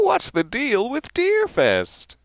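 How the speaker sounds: very high, swooping, swoopy comic voice. Joking that a greeting sounds like an opening line: bad Seinfeld impression. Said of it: "That was not a good Seinfeld impression".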